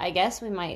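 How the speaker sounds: ordinary talk, nothing marked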